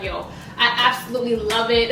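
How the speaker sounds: normal talking voice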